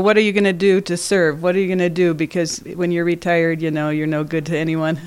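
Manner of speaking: plain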